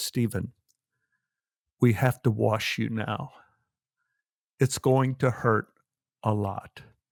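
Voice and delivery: hushed half-whisper, very close and quiet. Retelling what a nurse said at night: imitating a nurse half-whispering. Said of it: "comes up and whispers to me and says".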